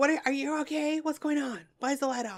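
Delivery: put-on high-pitched grandma-style yell. Retelling grandma hearing someone up at night: imitating grandma yelling. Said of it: "She'll yell".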